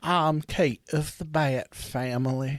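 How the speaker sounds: rich Alabama drawl, near transatlantic. Voicing the ghost, imagined as from a rich Alabama family: rich Southern drawl. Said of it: "a southern drawl, like one of those rich fucking Alabama families".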